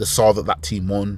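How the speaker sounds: usual speaking voice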